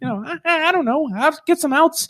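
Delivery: very high voice. Speaker retells a pitcher's answer about his next goal, high voice imitating a pitcher. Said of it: "I don't know why I make him have such a high voice".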